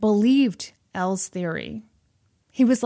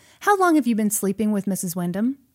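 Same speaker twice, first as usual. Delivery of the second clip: plain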